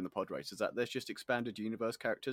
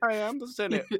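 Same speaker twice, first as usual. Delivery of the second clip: laughing, much higher pitch; 13 semitones higher, 7 dB louder than usual. Trying a crossover bit with the other speaker, Kermit voice broken by laughing. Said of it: "I can't do the voice because I'm laughing".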